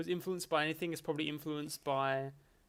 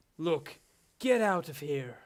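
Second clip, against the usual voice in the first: American speaker putting on a fake British accent; 4 dB louder than usual. Describing how game characters all sound alike, in a fake british but american accent. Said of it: "the fake fake British but actually American accent".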